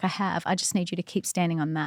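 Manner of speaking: normal talking voice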